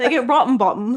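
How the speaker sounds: English-accented voice.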